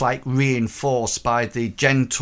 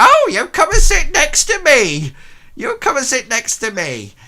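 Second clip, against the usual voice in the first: put-on eager, shrill, very high, very loud sing-song old woman; 13 semitones higher, 8 dB louder than usual. Voicing an old woman who invites a player to sit: old working woman NPC voice. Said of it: "and she goes".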